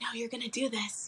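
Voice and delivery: soft, hushed half-whispered stage whisper. Retelling what a little bird on the shoulder kept saying: imitating a half-whisper.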